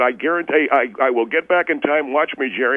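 ordinary talk, nothing marked

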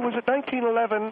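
plain

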